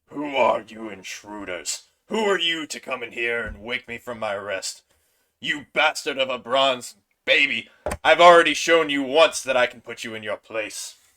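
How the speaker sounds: dragon character voice. Voicing a dragon woken by intruders: dragon character voice. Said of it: "the guys that do speak Draconic hear".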